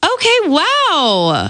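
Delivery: encouraging, approving, high, with wow drawn out. Saying the same line in several emotions for viewers to rate, first supportive. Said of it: "So this is supportive".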